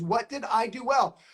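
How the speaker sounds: plain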